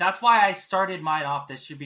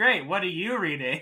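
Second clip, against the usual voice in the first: overly polite, supportive tone, laid on thick; 3 semitones higher than usual. Retelling own past words during a friend's reading slump, mock overly polite. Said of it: "Just me being so polite".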